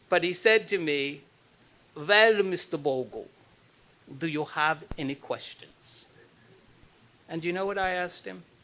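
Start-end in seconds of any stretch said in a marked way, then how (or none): 1.9-6.0 put-on heavy, drawn-out Austrian accent. Recalling what Preminger said to him that first day, in Otto Preminger's thick Austrian accent. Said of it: "he was from Austria and he had a thick accent".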